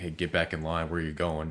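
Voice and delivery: normal talking voice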